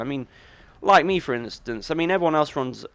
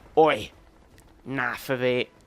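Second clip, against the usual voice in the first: put-on London gangster voice, slower. Describing how the Penguin sounds in the game, Penguin's London gangster voice. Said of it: "he's a London gangster".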